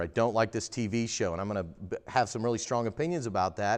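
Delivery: normal talking voice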